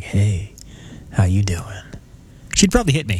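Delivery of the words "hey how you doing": smooth jazz voice, lower, slower. Imagining greeting his girlfriend in the bedroom, smooth jazz voice. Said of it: "my smooth jazz voice".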